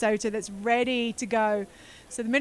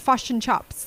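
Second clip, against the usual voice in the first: New Zealand accent; 4 dB louder than usual. A speaker demonstrates how New Zealanders say a phrase, in a New Zealand accent. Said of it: "they do a kind of a bit of a flattening of their um, eyes to a fush".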